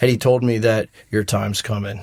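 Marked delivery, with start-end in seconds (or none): 1.1-2.0 serious tone, quieter. Retelling what a battalion commander told the speaker: imitating a serious warning. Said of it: "got all serious".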